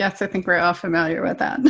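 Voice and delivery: ordinary talk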